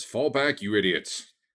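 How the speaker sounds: shouting from afar. Narrating a human voice from the other side of the room, distant yell. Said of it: "Sounds like he's yelling from the other side of the room".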